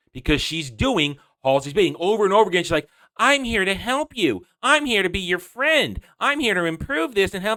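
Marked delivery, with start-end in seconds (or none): 3.1-7.5 sarcastic, mock-helpful sweetness, pitched up. Speaker describes how Cortana behaves toward John, mocking Cortana impression. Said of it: "behaving like a manipulative bitch".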